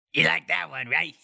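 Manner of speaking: unreal, high, creaky cartoon-character voice. Retelling a scene, voicing the fish man on the other side of the door in a cartoon character voice. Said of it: "the dude sounds like a cartoon character".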